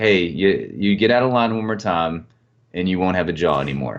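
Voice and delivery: put-on, mock matter-of-fact delivery. Quoting a man from this week's episode, retelling a matter-of-fact threat. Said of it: "it was very matter of fact".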